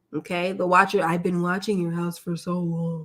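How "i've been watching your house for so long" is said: put-on creepy voice. Retelling a show's letter from the watcher: imitating the watcher's creepy voice. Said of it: "Isn't his voice creepy?".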